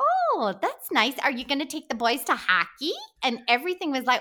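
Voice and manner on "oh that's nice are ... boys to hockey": put-on small-town Minnesota accent, lilting up and down. Actor recalls taping an audition for a lead role, doing a Minnesota accent like Fargo. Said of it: "doing a Minnesota accent like Fargo".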